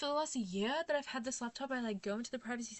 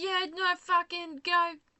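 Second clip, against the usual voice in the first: put-on raised Australian accent; 6 semitones higher, 8 dB louder than usual. Imitating people giving directions in this country: imitating locals in Australian accent. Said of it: "sorry, that's Australian".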